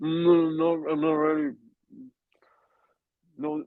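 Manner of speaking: very high, garbled, talking through a full mouth. Complaining about staff collecting plates too early, pretending to talk with a mouthful. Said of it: "with a mouthful of B M T".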